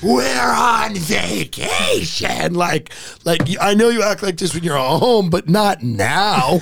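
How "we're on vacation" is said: put-on scream, much higher, slower. Retelling a mother at the pool screaming at her struggling kids, retelling a scream. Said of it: "she just screamed".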